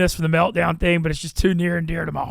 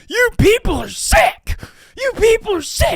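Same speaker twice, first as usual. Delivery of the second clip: put-on angry ranting voice, higher and louder; 5 dB louder than usual. Retelling a coach's press conference rant after fans cheered an injury: imitating Moore's rant. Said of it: "Moore gets on the press conference".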